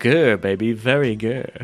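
very slow, stretched-out words. Reading out a listener's suggestion, then doing an Austin Powers voice. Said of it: "Austin Powers voice".

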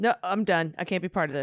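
normal talking voice

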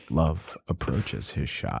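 hushed, whispered golf commentator voice. Asked to do a golf voice, commenting on a player's shot, in golf announcer voice. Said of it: "Can you do a golf voice?".

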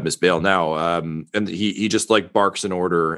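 normal talking voice

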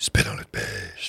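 demonic devil voice. Joking about getting on Satan's good side, do a Satan voice. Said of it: "that's a good Satan voice".

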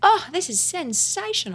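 very high, bad put-on Australian accent. Quoting an Australian understudy about her food, in a bad Australian accent. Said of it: "as you can probably tell by my bad Australian accent".

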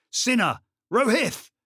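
shrill, very high, loud calling-out shout. A man calling for two missing soldiers in the silent darkness, shouting. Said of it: "Then he shouted".

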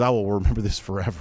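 ordinary talk, nothing marked

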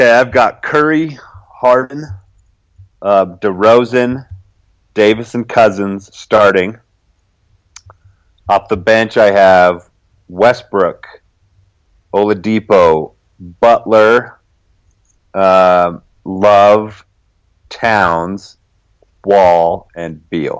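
very slow, halting delivery with long pauses. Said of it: "I said that very slowly".

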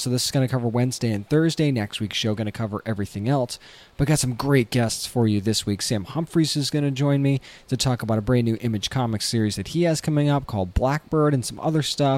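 talking softly. Opening a podcast episode late at night in a hotel room: talking softly. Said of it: "I'm talking so softly".

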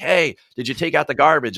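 plain

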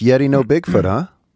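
weird put-on Jamaican accent. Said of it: "you guys sound Jamaican in a weird way".

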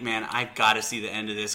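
ordinary talk

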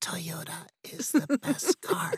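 slow, hoarse, raspy voice. Retelling a voiceover audition read: imitating own past raspy read. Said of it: "I sound like I'm in a hospital".

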